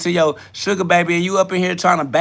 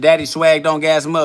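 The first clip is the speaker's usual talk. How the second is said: plain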